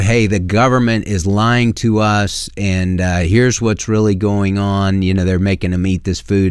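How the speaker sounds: usual speaking voice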